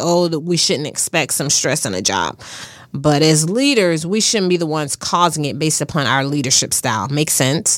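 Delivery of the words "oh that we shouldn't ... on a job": normal talking voice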